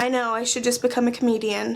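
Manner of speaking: quick, sarcastic tone. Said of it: "That was totally sarcasm".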